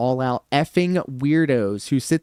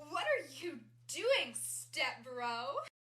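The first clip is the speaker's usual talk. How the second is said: put-on furry voice, very high, very soft; 11 semitones higher, 18 dB quieter than usual. Showing how a furry voice sounds after being asked: furry voice. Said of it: "How do you do a furry voice?".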